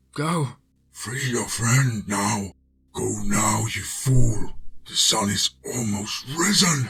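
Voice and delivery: voice shifted dark. The narrator reads the beautiful woman urging him to free his friend: dark voice. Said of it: "voice shifted into something dark".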